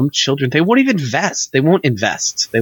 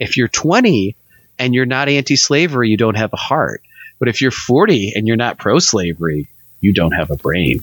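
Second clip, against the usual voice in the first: mock tongue-in-cheek sarcastic put-on delivery; 2 semitones lower than usual. Arguing a mock point with another speaker in a sarcastic tone. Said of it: "That's the worst sarcasm I've ever done".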